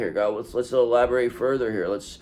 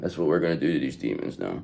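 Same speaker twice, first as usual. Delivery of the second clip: usual speaking voice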